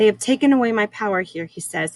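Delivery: plain reading voice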